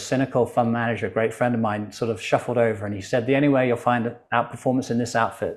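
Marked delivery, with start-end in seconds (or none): none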